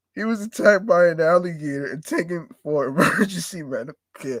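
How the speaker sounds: giggling, laughing through the words. Reading out a news story about an alligator attack: laughing while talking. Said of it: "I'm sorry for laughing".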